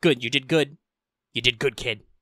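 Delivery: rough, gruff samurai lord voice. Describing a game, the speaker voices the lord praising the player in a gruff samurai voice. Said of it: "he says in his gruff samurai voice".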